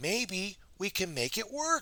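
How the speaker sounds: excited squeak with swooping, bouncing pitch. Narrating a Pooh story, delivering Piglet's line in Piglet's excited squeak. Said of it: "Piglet squeaked in a very excited voice".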